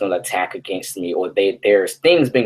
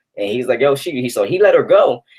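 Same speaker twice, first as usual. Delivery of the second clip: ordinary talk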